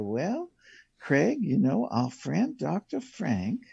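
little, sweet, soft-spoken, sing-song Southern voice. Retelling meeting a woman in her 70s, imitating her sweet Southern voice. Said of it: "this little sweet Southern voice and soft spoken".

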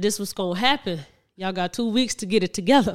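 ordinary delivery

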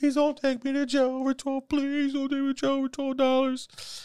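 very high, sobbing, crying, begging voice. Retelling a story about a guy named Mark, imitating Mark crying. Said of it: "he's like crying".

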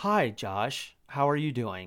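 calm, quiet, collected put-on voice. Retelling a phone call: imitating Bill Gothard's calm, quiet tone. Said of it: "that kinda tone of voice".

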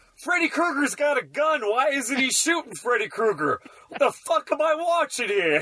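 acted, high-pitched screaming. Telling about watching a movie with his dad, imitating dad screaming at the TV. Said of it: "he kept screaming at the TV".

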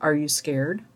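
soft, dead calm, even tone. Retelling a driver's words after a pause in the ride: imitating a very calm question. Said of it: "saying very calmly".

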